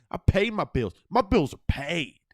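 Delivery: put-on proud Southern accent. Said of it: "she says it in this Southern accent".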